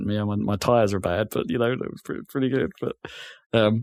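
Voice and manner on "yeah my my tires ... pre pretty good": put-on deadpan voice, quieter. Imitating how the driver normally talks after a race: deadpan Lewis Hamilton impression. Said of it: "Lewis Hamilton's quite deadpan".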